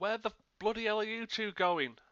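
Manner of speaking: loud, high-pitched bellowed shout. A tabletop player's character calls after two people running off, shouting. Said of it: "Just gonna shout".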